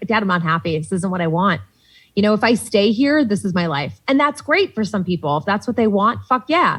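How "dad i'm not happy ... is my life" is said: ordinary talk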